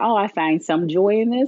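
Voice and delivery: ordinary talk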